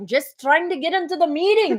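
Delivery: put-on very thick, broad, heavy Scottish accent. Retelling a stranger who tried to get into their meeting, super Scottish accent. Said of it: "like super Scottish accent".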